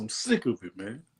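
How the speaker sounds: soft comic narrator voice. Speaker voices people tired of it, switching into a Tony Baker voice. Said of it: "Tony Baker voice".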